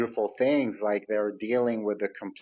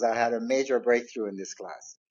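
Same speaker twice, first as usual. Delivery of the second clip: put-on excited, eager student voice. Retelling a student who bursts out to share: imitating an excited student. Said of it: "she's jumping, bursting out of her chair".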